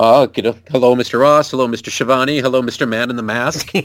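wrestler's voice at the commentary desk. Retelling a wrestler greeting each announcer at the desk: imitating Regal at the announce table. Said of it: "when he comes to the announcing table and it's like".

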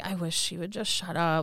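mock muttering under breath. Retelling what a man muttered about his partner: imitating muttering under breath. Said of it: "under his breath".

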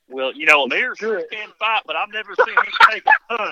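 loud, swooping, put-on country guy twang. Asked to say something again as the farmer, in the country guy voice. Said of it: "say anything in that country guy voice".

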